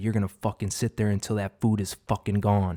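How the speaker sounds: put-on strict tone. Retelling how a strict father spoke to his kids, imitating a strict tone. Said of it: "It was with that tone".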